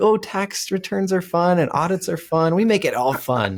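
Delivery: high-pitched, fake, gushing cheerfulness.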